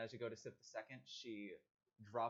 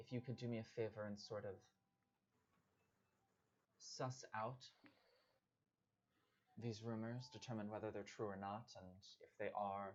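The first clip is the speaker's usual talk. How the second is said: soft, quiet whisper. A character turns toward the group and speaks in a quiet whisper. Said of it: "in like a quiet uh, whisper".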